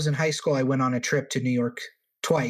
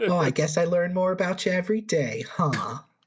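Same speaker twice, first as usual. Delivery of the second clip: high, fond yet patronizing, condescending tone; 5 semitones higher than usual. Repeating the other speaker's joke line: imitating an endearing yet condescending voice.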